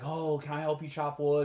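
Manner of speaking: ordinary delivery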